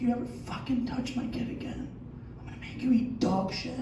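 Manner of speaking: soft, unvoiced, menacing, threatening whisper. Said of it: "I'll just whisper".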